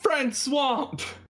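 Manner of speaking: in-character battle scream, very high pitched. Playing a character who breaks down a door and calls to a friend: screaming out in character. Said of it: "I scream out".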